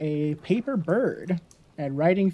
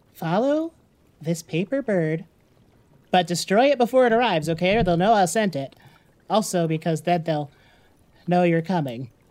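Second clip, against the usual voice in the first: pleading, wheedling gnome voice. A game master voices a deep gnome talking to the party: Zabillabob deep gnome voice. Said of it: "And inside you find the deep gnome, [name], / He stumbles for a second. / Please don't hurt old [name]. [name] is good to know".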